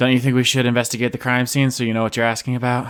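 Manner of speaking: languid, weary, sultry, level tone. Jacqueline, asked to tell more about the Caravellas, replies in a sultry, tired voice. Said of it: "I love to hear that sultry, tired voice".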